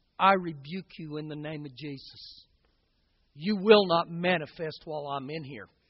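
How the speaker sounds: muttering under the breath. Retelling a captain's words said under his breath, retelling a mutter under breath. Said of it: "says under his voice".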